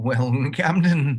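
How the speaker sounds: dramatic voice with a warble running through. Imitating a character's voice: B'Elanna warbly voice. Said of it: "B'Elanna has this sort of warbly".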